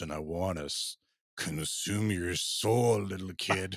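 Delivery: slowed, distorted, dragging playback voice. Describing a malfunctioning device with a moving mouth, imitating warped, dragging playback. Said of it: "started to sound like this".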